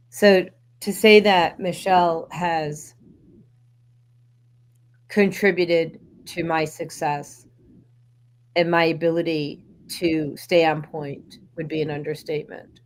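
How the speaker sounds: tears just held in check, fighting off crying. Speaking about Michelle's contribution to her success, trying not to cry. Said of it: "I'm trying not to cry".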